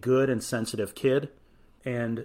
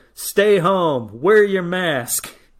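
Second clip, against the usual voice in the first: mock yelling, higher and louder; 7 semitones higher, 6 dB louder than usual. Retelling a covid safety video in a mask: imitating Tommy Lasorda yelling. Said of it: "and he's just yelling".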